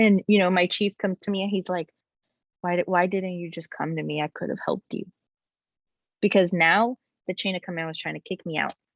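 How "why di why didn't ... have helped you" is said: ordinary talk, nothing marked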